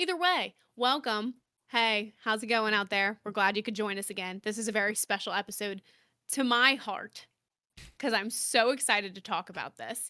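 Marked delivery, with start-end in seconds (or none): 0.0-4.4 soothing, calm, host-like delivery. Podcast host welcomes listeners back to the show, in a soothing host tone. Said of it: "the soothingness of your like host tone".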